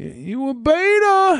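mocking voice, high and slow. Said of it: "Jesse Lee Peterson would be like".

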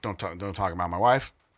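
ordinary talk

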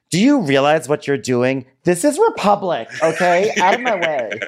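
mock very high-pitched indignant scolding, drawn out. Imagining the inner t j at the airport: imitating an indignant t j. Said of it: "part of me that wants to be like".

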